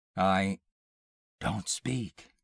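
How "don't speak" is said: whispered, barely voiced, soft and hushed. She cuts off his reply and whispers to him. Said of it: "she whispered".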